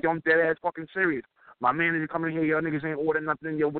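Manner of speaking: ordinary talk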